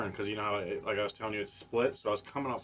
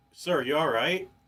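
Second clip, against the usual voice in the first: deeply concerned, with a raised, high pitch; 6 semitones higher, 6 dB louder than usual. Retelling a story, voice the cop who walked up to the car window: imitating a very concerned cop. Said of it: "Like very concerned".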